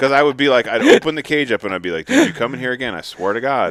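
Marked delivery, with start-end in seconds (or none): 2.0-3.7 stern, swooping, scolding tone. Retelling warning a trapped possum at the cage: retelling a stern talk. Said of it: "give 'em a good stern talk".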